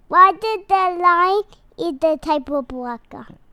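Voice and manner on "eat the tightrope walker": ordinary talk, nothing marked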